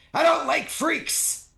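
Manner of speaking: very high, shrill, loud freakish weirdo voice. Voicing a shotgun-wielding enemy who rejects the group: voice that sounds like a freak. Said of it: "He sounds like a freak!".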